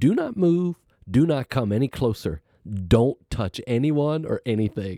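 acted-out yelling, shouting. Recalling a nurse at the front door stopping the speaker, imitating a nurse yelling. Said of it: "she starts yelling at me".

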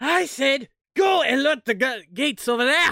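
very loud, very high screaming. Voicing Lieutenant Flem in a game scene: Lieutenant Flem screaming. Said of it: "Lieutenant Flem screams out once more".

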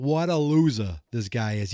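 thick, exaggerated, heavy New England accent. Playing a child reporting another kid to high school senior Jason, exaggerated New England accent. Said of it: "I'm saying that with the most New England accent I could think of".

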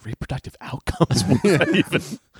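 muttering, mumbling under breath. Retelling how a woman reacted to a man's remark, muttering to herself. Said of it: "She just mutters to herself".

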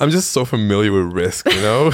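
ordinary delivery

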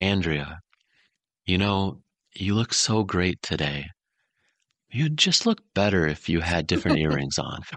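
kind, caring, gentle nurturing tone. Demonstrating how criticism gets delivered to andrea, nurturing voice. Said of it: "always done in this nurturing voice".

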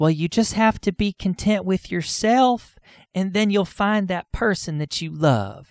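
nurturing drawn-out drawl. Quoting the advice everybody gives someone desperate to find a partner, in a nurturing drawl. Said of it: "I don't know why I did that accent".

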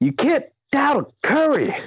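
bad put-on voice, very high, wildly swooping. Quoting a sports commentator on a podcast: Stephen A. Smith impression. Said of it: "That's my best Stephen A. Smith in-, impression".

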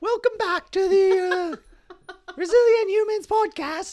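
bad British accent, very high and slow. Podcast host opens the Resilient Humans Podcast with a bad Harry Potter accent. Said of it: "I was going to do this as Harry Potter".

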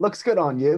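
put-on British accent. Retelling a late friend's words heard in memory: imitating a friend's english accent. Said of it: "I'm gonna butcher the accent".

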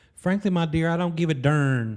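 put-on effeminate Southern gentleman voice. Quoting a movie line on a podcast, effeminate southern gentleman voice. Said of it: "your effeminate Southern gentleman voice".

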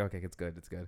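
panicky, nervous, freaked-out voice. Retelling a late night phone mishap: imitating own past panic. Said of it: "freaking out".

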